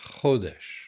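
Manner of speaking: chodesh with stress on first syllable cho. Vocabulary lesson on the word for month: chodesh stressed on first syllable. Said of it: "emphasis on the first syllable".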